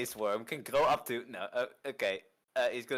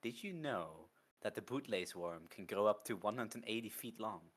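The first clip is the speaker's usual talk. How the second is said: hushed whisper, much quieter; 2 semitones lower, 9 dB quieter than usual. Sheo whispers back to the group, disregarding news of a cavern; Sheo whispering back. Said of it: "Sheo's going to whisper back".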